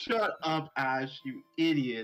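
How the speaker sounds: put-on angry outburst voice. Retelling own reaction to a cartoon scene, retelling an angry outburst. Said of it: "I was so pissed".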